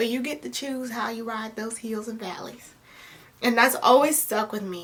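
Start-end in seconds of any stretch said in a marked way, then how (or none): 0.0-2.7 put-on Southern accent, quieter. Quoting a professor's advice in her voice, imitating a Southern accent. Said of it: "she has a Southern accent".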